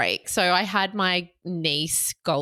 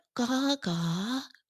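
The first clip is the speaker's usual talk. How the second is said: put-on toddler voice, higher and quieter; 6 semitones higher, 5 dB quieter than usual. Retelling how a three-year-old says her name: imitating Goldie saying Gaga. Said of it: "And the way she said it is so".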